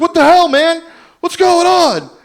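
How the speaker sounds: angry, very high, loud carnival barker shout.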